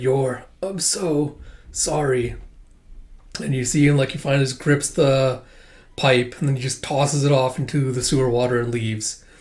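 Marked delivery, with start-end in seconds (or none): 0.0-2.3 very slow, drawn-out, hushed half-whisper. Retelling a beaten character's last words to Yor: imitating a half-whisper. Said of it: "Yuri kinda just whisper".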